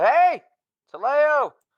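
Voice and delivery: very high, shrill, loud yell. Calling out to a party member in character: yelling. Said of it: "I yell out".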